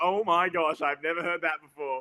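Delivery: ordinary talk, nothing marked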